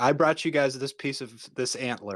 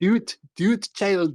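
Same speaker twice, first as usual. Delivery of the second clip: Scottish accent, way up high; 9 semitones higher, 4 dB louder than usual. Speaker asked to say the line in a Scottish accent: Palpatine in a Scottish accent. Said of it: "Yes, in a Scottish accent".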